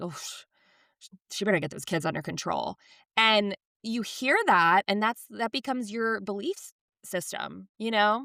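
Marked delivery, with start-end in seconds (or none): 0.0-2.8 fast muttering, murmured under the breath. Retelling how mom reacted on seeing unruly kids, imitating a mutter under breath. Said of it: "under her breath".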